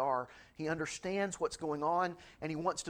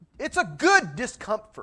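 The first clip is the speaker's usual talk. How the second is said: very loud, slow, swooping preacher-style yell; 6 semitones higher, 12 dB louder than usual. Addressing an audience, yelling. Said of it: "Sorry, I didn't mean to yell".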